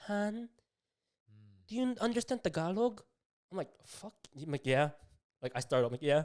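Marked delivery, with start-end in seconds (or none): 0.1-3.0 put-on sweet, pitched-up old lady voice, Filipino accent. Retelling what a woman said to him, in a nice Filipino old lady voice. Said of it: "she says this in like the nice Filipino old lady".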